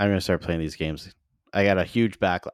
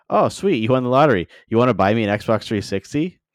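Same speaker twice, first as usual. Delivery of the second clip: dry, joking, tongue-in-cheek sarcastic tone; 3 semitones higher, 4 dB louder than usual. Speaker retells jokingly asking people who won money for an Xbox, retelling own sarcastic joke. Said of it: "jokingly like sarcastically was like".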